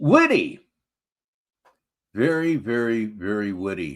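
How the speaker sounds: heavy, slow, dripping, mocking sarcasm. Responding to the previous speaker's rant with praise: sarcastic. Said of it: "I'm being sarcastic, of course".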